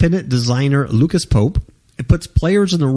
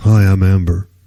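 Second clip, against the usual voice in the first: deep put-on voice, pitched low; 6 semitones lower, 3 dB louder than usual. Telling how a university made a Sims character, the speaker does a deep Amber voice. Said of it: "It gave her a deep voice like this".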